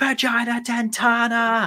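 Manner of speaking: mock screaming, very high-pitched. Retelling a film scene where a character screams: imitating a scream. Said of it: "he just starts screaming".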